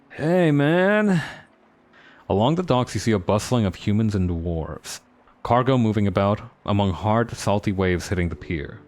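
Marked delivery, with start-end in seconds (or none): 0.2-1.3 put-on hippie voice, pitched up. A narrator trying out a voice for a character, in a hippie voice. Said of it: "Or maybe like a hippie voice".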